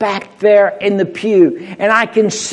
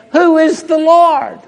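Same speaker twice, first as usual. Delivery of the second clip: scoffing, sarcastic, pitched-up voice; 8 semitones higher than usual. Reading Pharaoh's line from Exodus aloud: imitating a sarcastic question. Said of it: "I think he said that kind of sarcastically".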